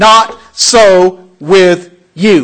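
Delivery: very loud, very slow, detached staccato words. Speaker showing listeners how to read Jesus's words, staccato and emphatic. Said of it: "I want you to read it in a staccato voice".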